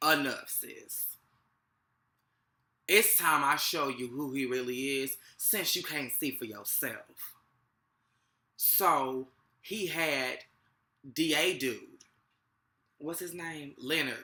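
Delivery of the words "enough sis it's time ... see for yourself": put-on godlike voice, divine pronouncement manner. Retelling a show scene, speaking as God: imitating God. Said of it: "And then God was like".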